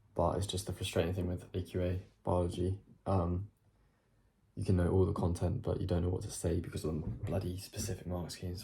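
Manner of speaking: speaking quietly. Talking late at night without waking the family: speaking quietly. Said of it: "Speaking quietly 'cause it is late".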